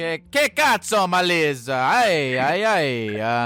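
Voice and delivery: high, very slow Italian accent, stretched ay. Playing with how a name sounds, saying this in an italian accent. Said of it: "that's Italian".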